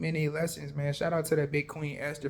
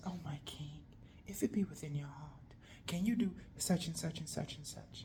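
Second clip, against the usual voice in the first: soft, hushed, pleading queen voice. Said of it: "She said".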